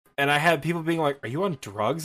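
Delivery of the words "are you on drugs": usual speaking voice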